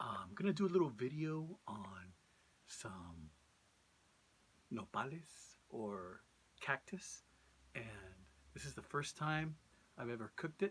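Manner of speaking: secretive, hushed half-whisper. Video maker hiding in the shed from a nosy neighbor, introducing a cooking video; half-whispering. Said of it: "I'm whispering because I don't want to be heard".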